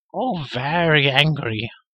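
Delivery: complaining, whining, whiny voice. A creature answers a companion's question, whining. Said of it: "whined Gurgi".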